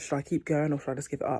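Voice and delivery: ordinary talk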